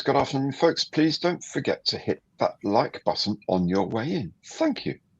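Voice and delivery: put-on posh, regal King's English accent. Reading a viewer's chat message aloud in a regal King's English accent. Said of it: "Sounded very regal".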